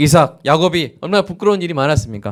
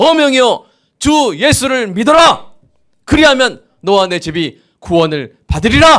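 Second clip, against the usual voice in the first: bold, confident, booming, high ringing voice; 7 semitones higher than usual. Preacher shows the congregation how a royal decree is announced, booming confident proclamation. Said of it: "우렁찬 목소리로 당당하게 선포하는".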